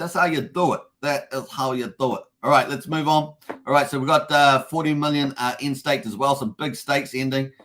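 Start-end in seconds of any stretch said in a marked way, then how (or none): 0.0-2.2 spoken with an Italian accent. Praising a viewer's use of emojis, Italian accent. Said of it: "I say that in Italian accent".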